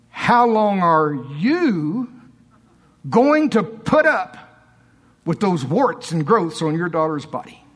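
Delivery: stern voice with a drawn-out "you". Retelling what the Lord said to a man, quoting a stern voice. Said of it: "the Lord said to me in a stern voice".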